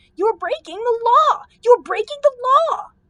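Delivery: very high, shrill, squeaky cry. Reading a frightened gardener peeping from behind a bush: squeaky crying out. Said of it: "cried in his squeaky vo-, voice".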